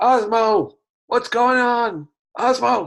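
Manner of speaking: full, very high, loud yelling shout. Playing a character banging on a blocked door, calling out to Osmo, shouting. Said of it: "And I shout".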